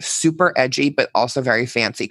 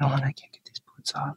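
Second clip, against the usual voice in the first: put-on whisper, quieter; 8 dB quieter than usual. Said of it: "whispering to me".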